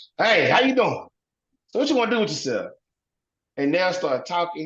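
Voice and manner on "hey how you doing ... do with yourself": big, loud, rowdy, boisterous, pitched-up voice. Recalling how his daddy greeted women he brought home, imitating loud boisterous dad. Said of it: "he'll walk in the room all loud and boisterous".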